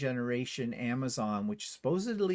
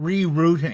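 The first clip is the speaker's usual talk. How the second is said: put-on, very loud, pissed-off navigation voice, barked; 3 semitones higher, 12 dB louder than usual. Complaining about the car's navigation voice, the speaker imitates it rerouting: mock-annoyed navigation voice. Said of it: "You could hear it in her voice".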